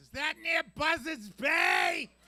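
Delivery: very loud, shrill, high-pitched shout. Retelling what he said to someone who lives in Chatham, in a really loud voice. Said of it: "Then I said in a really loud voice".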